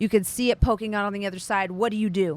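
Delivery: ordinary delivery, nothing marked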